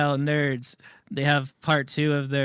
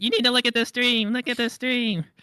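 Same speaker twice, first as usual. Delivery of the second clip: shrill, fed-up, insistent, very high, mad; 10 semitones higher than usual. Acting out what someone is going to say about the stream, imitating Beans getting mad. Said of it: "Beans is gonna get mad and be like".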